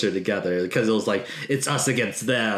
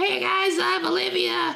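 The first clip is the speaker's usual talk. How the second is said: squeaky, very high, rough, creaky cartoon voice. After the co-host declines to do the commercial break, imitate her in a Teen Girl Squad voice. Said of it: "you sound just like the voice".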